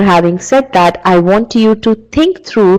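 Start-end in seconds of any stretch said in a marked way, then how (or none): none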